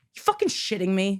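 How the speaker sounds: abrupt, indignant, angry blurted outburst. Showing what the speaker blurts out alone at home: imitating own outburst. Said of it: "just an outburst of a".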